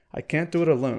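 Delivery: ordinary delivery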